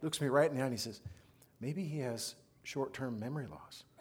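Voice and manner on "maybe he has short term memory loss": deadpan delivery, much slower. Retelling a reply from one of the Slater kids, imitating deadpan delivery. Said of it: "Just deadpans".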